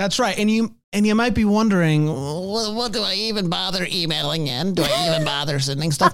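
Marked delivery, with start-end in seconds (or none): 2.1-6.1 odd, halting voice with a stumbling start. Voicing what listeners might wonder about emailing in: imitating listeners' strange way of talking. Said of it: "Why do they talk like that?".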